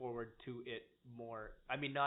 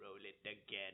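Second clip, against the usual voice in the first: low, soft, hushed villain voice; 4 semitones lower, 8 dB quieter than usual. Retelling an actor's moment at a fan convention, Emperor voice impression. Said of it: "in his Emperor voice".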